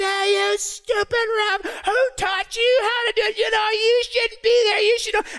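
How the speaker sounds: mock, high-pitched, out-of-control screaming rant. Retelling a friend losing her temper at a soccer game: imitating someone screaming. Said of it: "she starts screaming her head off".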